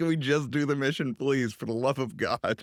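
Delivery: ordinary delivery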